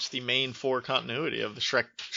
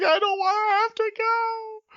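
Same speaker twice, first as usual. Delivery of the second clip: mock crying child voice, higher and louder; 6 dB louder than usual. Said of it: "she legitimately broke down crying".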